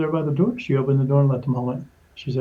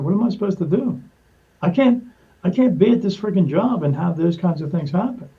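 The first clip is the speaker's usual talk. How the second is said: put-on voice choking up, desperate; 4 semitones higher than usual. Retelling own complaint about the job: imitating own choked-up words. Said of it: "I started choking up".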